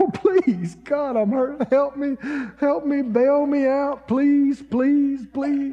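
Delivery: weeping, tearful, begging voice. Retelling how he begged God while hurting, acting out his own crying. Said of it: "Because I'm a crying".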